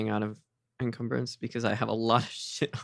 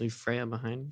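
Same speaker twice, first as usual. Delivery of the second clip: quiet mutter under the breath; 4 dB quieter than usual. Voicing a character's remark about leaving someone behind, muttered under his breath. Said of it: "Marcus says under his breath".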